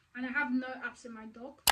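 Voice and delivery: ordinary talk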